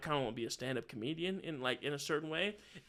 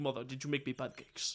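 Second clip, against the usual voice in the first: fake, put-on Russian accent on English; 3 semitones lower, 4 dB quieter than usual. Retelling coming downstairs as a teen and asking mother, put-on russian accent. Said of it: "I did the Russian accent a lot".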